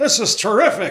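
high-pitched ballpark announcer voice. Showing how to slide into a baseball announcer: imitating Harry Caray. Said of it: "you get into Harry Carey".

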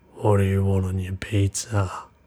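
low, deep, threatening, menacing voice. Narrator voices the unknown guy in the kitchen, deep and menacing. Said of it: "In a deep and menacing voice".

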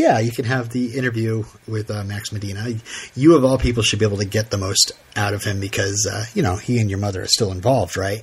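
ordinary talk

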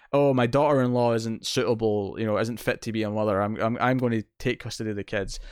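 normal talking voice

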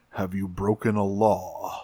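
stern, low, hushed voice. Retelling Optimus leaning in very close to question Jack: imitating Optimus sounding stern. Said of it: "very close and very sternly asks".

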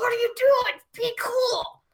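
very high, gritted-teeth, clenched-teeth voice. Retelling what a woman said while a detective questioned them, retelling clenched-teeth talk. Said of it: "clenched teeth all the way".

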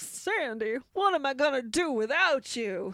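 put-on greaser-style character voice. Retelling a film's end of summer, Danny speaks to Sandy in a John Travolta voice. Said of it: "What was that voice?".

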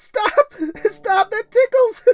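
very high, very loud laughing shrieks. Amanda, being tickled during playful wrestling, screeching with laughter. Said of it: "screeched out in laughter".

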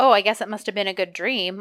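normal talking voice

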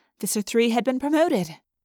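ordinary delivery

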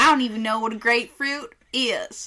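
put-on Southern accent. Joking about tasting burnt tire in a beer, put-on Southern accent. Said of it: "There's nothing wrong with Southern accent".

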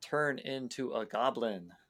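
ordinary delivery

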